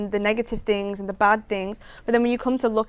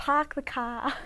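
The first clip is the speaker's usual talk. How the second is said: soft, put-on Boston accent; 4 semitones higher, 8 dB quieter than usual. Two speakers trying out accents, repeating the example phrase in a Boston accent. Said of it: "let's go Boston accent".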